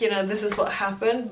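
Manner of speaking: plain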